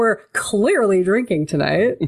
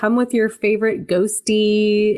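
normal talking voice

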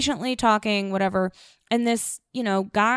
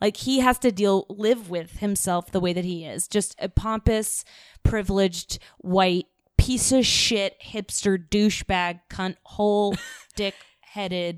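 ordinary talk

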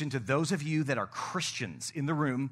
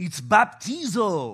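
loud, swooping put-on Greek movie accent; 4 semitones higher, 7 dB louder than usual. Explaining baptism to an audience, quoting a movie scene in a put-on Greek accent. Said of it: "That's my best Greek impression".

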